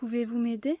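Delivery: rising pitch at the end of m'aider. Explaining interrogative sentences in a French lesson, rising pitch on m'aider. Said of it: "La voix monte à la fin".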